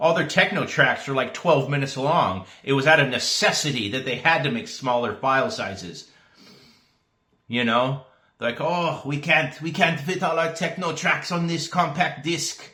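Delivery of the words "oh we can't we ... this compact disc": dubious put-on German accent, pitched up. Joking about why Germans invented MP3, the speaker voices them in a questionable German accent. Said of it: "If that's a German accent".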